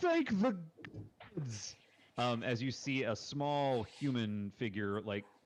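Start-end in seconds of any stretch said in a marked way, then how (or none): 0.0-1.7 very high, swooping, relieved outcry. A game master voices a hidden figure as a boar runs off: crying out. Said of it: "you hear a voice cry out".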